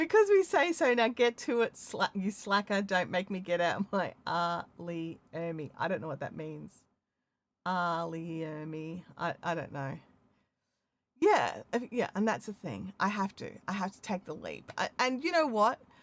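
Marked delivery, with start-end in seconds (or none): none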